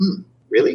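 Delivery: high-pitched, acted, skeptical, sarcastic disbelief. Describing how people react when looked at, imitating their mock-sarcastic, skeptical reply. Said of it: "that would be the sarcasm tone".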